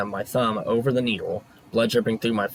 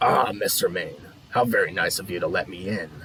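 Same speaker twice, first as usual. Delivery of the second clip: raspy voice with put-on friendliness; 3 semitones lower than usual. Narrator reads a silent-footed man's greeting as he walks in, in a raspy voice. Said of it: "he said in a raspy voice".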